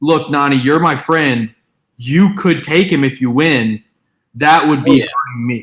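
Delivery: underhanded, fake-friendly, passive-aggressive tone. Retelling what she said to Nani: imitating a passive-aggressive tone. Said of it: "passive-aggressive tone of".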